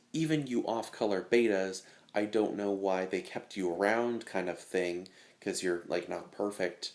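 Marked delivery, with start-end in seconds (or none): none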